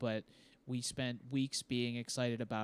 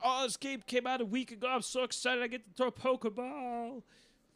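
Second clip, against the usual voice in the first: much higher, giddy, gushing put-on voice. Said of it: "that's how I remember you sounding".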